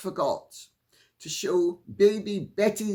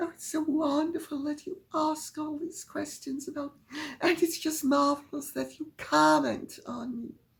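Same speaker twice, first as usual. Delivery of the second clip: mocking put-on whisper, higher pitched and quieter; 7 semitones higher, 6 dB quieter than usual. Doing a mocking impression in a whisper: mocking Meghan impression in a whisper. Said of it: "I'm going to do a Meghan".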